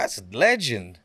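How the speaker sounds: ordinary talk, nothing marked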